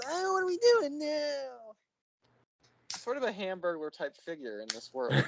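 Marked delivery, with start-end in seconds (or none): 0.1-1.7 put-on very high-pitched, slow, stretched-out posh British accent. Describing an annoying film character's walk and talk: imitating Fred's stupid posh British accent. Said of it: "his stupid accent, ... where he goes".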